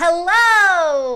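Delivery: very loud, stretched-out, drawn-out high shout. Leading a group in a hello game, saying hello as loud as possible. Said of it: "Let's say hello as loud as we can".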